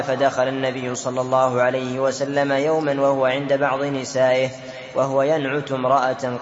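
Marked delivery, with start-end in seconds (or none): none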